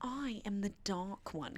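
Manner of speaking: slow put-on British accent, words drawn out. Retelling a book character's line: put-on British accent. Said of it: "'cause remember, he's British".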